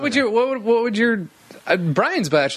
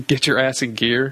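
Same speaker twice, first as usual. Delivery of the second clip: plain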